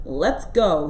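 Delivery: gruff grunting voice. Bill stomps toward the door and tells his gang, grunted. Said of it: "he grunted to his gang".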